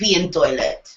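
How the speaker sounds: fake, emotional put-on Russian accent. Speaker mimicking someone who made nice with Ken, put-on Russian accent. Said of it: "I'm emotional Russian".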